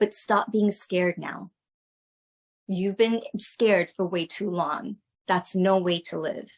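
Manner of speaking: ordinary talk, nothing marked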